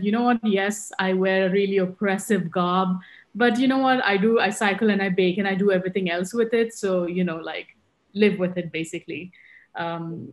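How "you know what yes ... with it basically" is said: ordinary delivery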